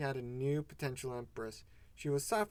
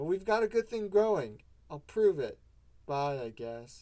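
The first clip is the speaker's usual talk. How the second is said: sullen, self-pitying, raised sulky voice; 2 semitones higher, 7 dB louder than usual. Reader voicing the troll c a signing off in a chat-log story: sulky. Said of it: "Sometimes he didn't understand why he waxed red for her. Being her morail was tiring enough. His blood boiling after another unproductive conversation with Feferi, he sulked in his self-pity. / He swo".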